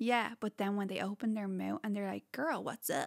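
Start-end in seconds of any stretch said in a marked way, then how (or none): 2.3-3.1 clumsy, badly done fake American accent. Mimicking tall American guys when they open their mouths, bad American accent. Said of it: "I mean I can't do the accent".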